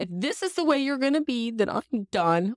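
high, tearful outburst, bursting into crying. Retelling bursting into tears in the middle of Menards, imitating own crying. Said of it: "I burst into tears and I go".

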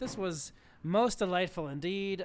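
ordinary delivery

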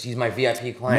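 normal talking voice

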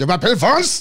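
French with German accent. Joking that they speak french with a german accent, then demonstrating it. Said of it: "I speak French with a German accent".

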